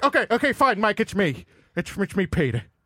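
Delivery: lively, swooping, pitch-swinging cartoon character voice. Admitting the fake Hank Hill was Peter all along: Peter Griffin voice. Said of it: "I know it was you, Peter".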